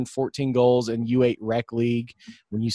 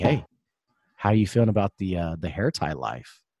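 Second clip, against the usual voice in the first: put-on whisper, lower pitch; 5 semitones lower than usual. Retelling a question someone came up and whispered to the speaker, imitating a whisper. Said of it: "she got up to me and whispered".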